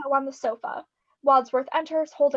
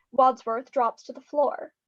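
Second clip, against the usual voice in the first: plain reading voice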